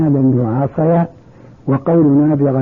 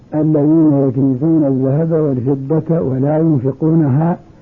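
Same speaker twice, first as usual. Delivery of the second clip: usual speaking voice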